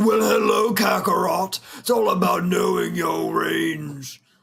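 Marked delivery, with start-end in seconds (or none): 0.0-1.6 pitched-up anime character voice. Showing vocal range with an example, Vegeta voice. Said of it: "even with like Vegeta".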